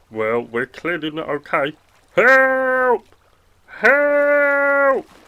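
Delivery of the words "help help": yelling, higher and louder. Stranded on a broken boat at sea, calling out: shouting for help. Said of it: "Who are you shouting for?".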